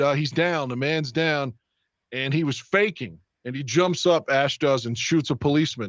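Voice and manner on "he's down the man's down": ordinary delivery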